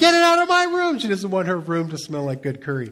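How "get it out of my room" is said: very high, shrill, very loud screaming. Retelling how she screamed over butter chicken brought into her room: retelling a scream. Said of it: "she's screaming at me".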